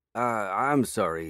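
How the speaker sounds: stammering, stuttering speech. The narrator, finding a stranger at the apartment door, apologizes: stammered. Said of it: "I stammered".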